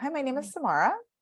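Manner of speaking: question-like rising upspeak tune on Samara. Explaining upspeak, demonstrating an introduction said like a question: rising upspeak. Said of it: "It's question mark energy".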